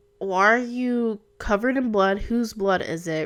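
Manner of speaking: plain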